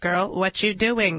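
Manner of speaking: slow text-to-speech computer reading voice. Describing how a text-reading service voices her messages: computer voice. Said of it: "this computer voice being like".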